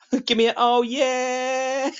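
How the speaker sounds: mock very high, drawn-out shout, yeah stretched. Imitating young lads heard in a game: imitating young lads shouting. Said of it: "you just hear some young lads shout".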